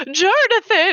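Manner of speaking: high-pitched, exclaimed, calling-out delivery.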